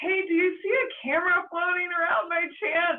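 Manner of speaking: mock very high call, yelled out. Retelling calling out at sea to someone farther out: retelling a yell. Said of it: "And I just yelled".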